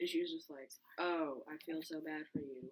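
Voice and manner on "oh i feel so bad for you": deadpan, flat, level monotone throughout. Speaker imagining a friend's reply to sad news: monotone, imitating Ryan. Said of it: "in monotone".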